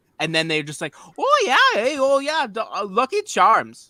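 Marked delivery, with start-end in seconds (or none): 1.2-3.7 very high, drawn-out, sing-song fake Irish lilt. Mocking Americans who do Irish accents for a non-Irish book: put-on Irish accent. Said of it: "I'm going to do an Irish accent".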